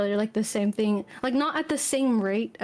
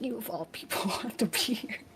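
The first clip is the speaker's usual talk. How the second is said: muttered under the breath, quieter; 8 dB quieter than usual. Voicing a character in a role-play scene: muttered under her breath. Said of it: "under her breath".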